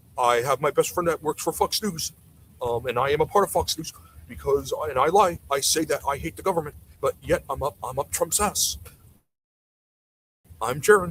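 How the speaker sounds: impression of a Canadian man's voice. Mocking a canadian guy with an impression of him: impression of a canadian guy. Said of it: "that's my impression of the, the impression of the Canadian guy".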